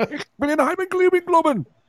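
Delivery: high, mock-German gibberish rant. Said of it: "a German accent".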